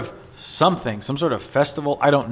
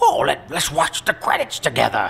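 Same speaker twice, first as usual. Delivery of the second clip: rough, creaky character voice. Retelling how Conan suggested watching the credits: imitating Conan doing a voice. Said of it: "He's doing a voice".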